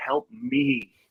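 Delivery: put-on desperate pleading, begging tone. Retelling a spirit box voice begging for help: imitating a desperate plea. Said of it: "You can hear the desperation".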